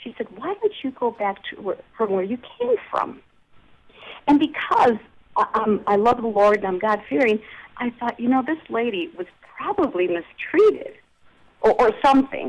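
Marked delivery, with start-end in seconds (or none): 0.4-3.2 scornful, disdainful, contemptuous tone. Retelling what a lady said in an encounter: imitating a disdainful tone. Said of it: "like with disdain".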